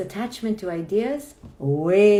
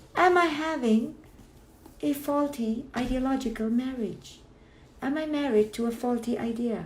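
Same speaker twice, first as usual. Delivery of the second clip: slow, high falsetto voice throughout; 5 semitones higher, 5 dB quieter than usual. Asking a question about faulty ideas aloud, talking in falsetto. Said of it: "I don't know why I'm talking in a falsetto voice".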